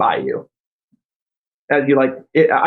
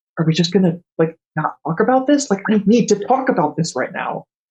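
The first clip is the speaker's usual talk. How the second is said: high-pitched, insistent, demanding tone. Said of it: "it's like".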